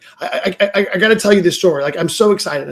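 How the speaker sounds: put-on bursting excitement, stammering, tripping over words. Retelling how the president opened a coaching call: imitating someone excited. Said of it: "He's really, really excited".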